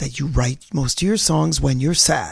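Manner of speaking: very low, deep put-on announcer voice. Talking to a fellow speaker who writes songs, in an announcer voice. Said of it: "I'll do it in the announcer voice".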